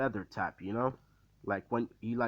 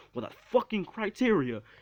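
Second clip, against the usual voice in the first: put-on very high, shrill, loud shout; 10 semitones higher, 4 dB louder than usual. Retelling a scene where Izuku answers back: imitating Izuku shouting.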